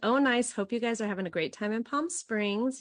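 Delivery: ordinary delivery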